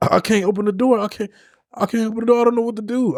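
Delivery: put-on frantic panic, pitched way up, pleading. Retelling being stuck in a crashed car: retelling own panic. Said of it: "So I'm panicking".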